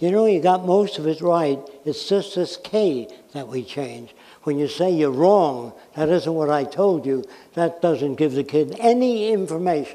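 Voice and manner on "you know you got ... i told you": plain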